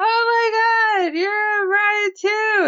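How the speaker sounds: put-on drunken gushing, very high-pitched and very slow. Retelling how a woman in a bar greeted another bride: imitating a drunk bride. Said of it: "That was my best drunk impression".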